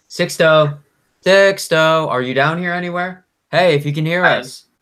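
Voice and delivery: very high, loud yelling, calling out. A character searches below, calling for Sixto, yelling out. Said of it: "He's yelling out like".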